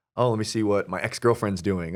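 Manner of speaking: ordinary talk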